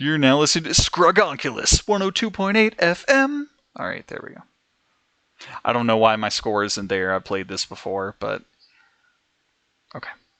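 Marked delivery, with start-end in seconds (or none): 0.0-3.5 pitched-up radio DJ announcer voice. Reading out a mapper's name, saying it like a radio station: radio station announcer voice. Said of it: "I gotta say it like the radio station did".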